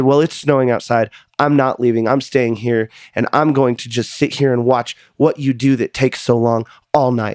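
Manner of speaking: ordinary talk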